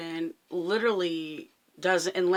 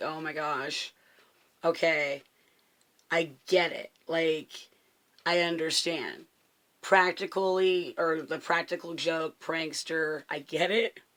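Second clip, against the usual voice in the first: plain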